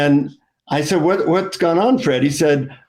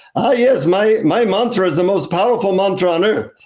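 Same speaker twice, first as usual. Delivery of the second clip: put-on Indian accent; 4 semitones higher than usual. Retelling what a guru at an ashram told the speaker, in an Indian accent. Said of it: "in an Indian accent".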